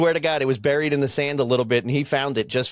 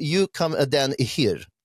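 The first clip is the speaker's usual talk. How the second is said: slow, put-on French accent. Speaker retells the guy in the store answering him, imitating a French accent. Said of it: "in like a French accent".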